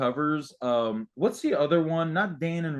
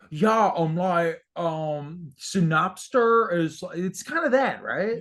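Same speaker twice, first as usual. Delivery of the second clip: put-on slow, light Dutch accent with drawn-out "um"; 4 semitones higher than usual. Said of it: "the [name] impression that I've never tried before. So let me try it now".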